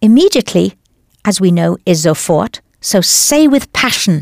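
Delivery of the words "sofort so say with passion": ordinary talk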